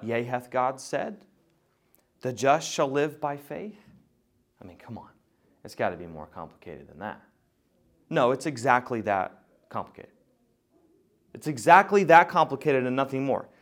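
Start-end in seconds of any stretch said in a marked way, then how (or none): 0.0-7.2 quieter, whispery serpent voice. Speaker voicing the serpent questioning what God said, whispery serpent voice. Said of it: "the whispery voice of the serpent says".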